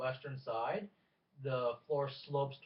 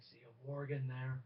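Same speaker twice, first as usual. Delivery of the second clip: hushed, put-on stage half-whisper; 4 dB quieter than usual. Voicing a companion warning a player about a warg: half-whispering in character. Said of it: "as he whispers over to you".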